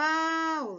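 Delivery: shouted, with a long, heavily stressed syllable pá. Imagining shouting a name at someone's gate: calling Paula, long stressed pá. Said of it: "você vai gritar o nome dela, ... pá é o mais forte".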